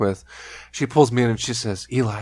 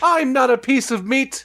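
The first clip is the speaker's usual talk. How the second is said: put-on flamboyant voice, pitched higher. Retelling a comedy skit at a party: flamboyant Jim Carrey character. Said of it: "being very flamboyant at this party".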